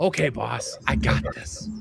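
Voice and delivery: weak, frail, rough croak of a sickly man. Voicing a frail, scurvy-addled man answering his boss: frail scurvy-addled man voice. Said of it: "the frail, scurvy-addled man walks up and he looks at him and goes".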